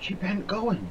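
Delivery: voice full of marvel, very high. Narrator reads Frith after the bird circles the lighthouse: with marvel. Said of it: "with marvel in her voice".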